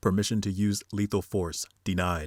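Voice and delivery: ordinary talk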